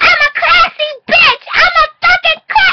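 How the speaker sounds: very high, very loud, grating, annoying show-off voice. Recapping the limo scene, imitating Valentina's annoying voice. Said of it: "She be talking like this".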